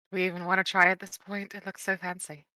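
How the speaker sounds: dejected, defeated, deflated giving-up tone. Wondering whether to even try in a fancy shop: defeated. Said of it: "You sound so defeated".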